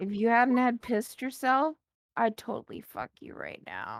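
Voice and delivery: soft, hushed whisper under the breath. Leaning over the counter in character to speak to a man: whispering. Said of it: "I am leaning over and I whisper to him".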